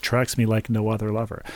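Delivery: normal talking voice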